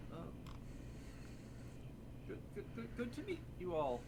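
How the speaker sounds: bashful little sprite voice, shy and whispering. Voicing a sprite greeting the party from behind hair: shy sprite voice. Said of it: "Seems a bit shy".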